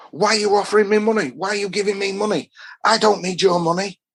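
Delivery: sudden, high-pitched outburst at the top of the voice. Retelling how a man stood up and started shouting: imitating someone shouting. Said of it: "starts shouting at me".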